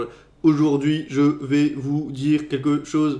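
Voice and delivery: very slow, flat, monotone robot voice. Showing what talking sounds like this way: robot voice. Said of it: "ça fait une voix de robot".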